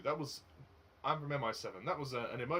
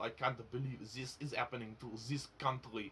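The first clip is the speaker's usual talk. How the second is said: thick, heavily laid-on French accent. Showing how an actor sounds in a movie: John Malkovich French accent. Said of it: "that's how kind of how it sounds ... I'm just doing an impression of John Malkovich in the movie".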